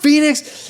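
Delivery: high, loud calling-out yell.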